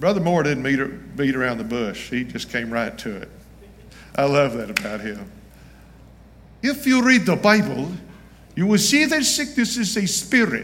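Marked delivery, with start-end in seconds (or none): 6.6-10.6 put-on Nigerian accent, pitched up. Quoting Brother Moore's words, in Brother Moore's Nigerian accent. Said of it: "goes in his Nigerian accent the best I can do".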